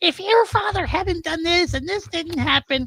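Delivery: irritating, annoying, high-pitched voice. Mocking a character's exposition scene from a trilogy, imitating an annoying voice. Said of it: "like in that annoying voice".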